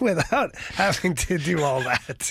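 words barely out before laughter breaks in. Arguing about the team's plans with others, laughing while talking. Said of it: "could barely get that out before laughing".

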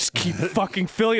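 play-acted pushy, bullying, browbeating tone. Acting out a commercial pitch as the customer: bullying a concession worker. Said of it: "this guy bullying this teenage".

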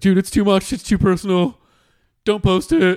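very high squeaky voice. Retelling a podcast partner refusing to post the first episode: impression of Brandon Calvillo. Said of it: "That's my impression of him".

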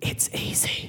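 hushed, soft, very quiet whisper. Retelling a hunting trip, quoting Dad: imitating a whisper. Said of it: "Dad just whispers in my ear".

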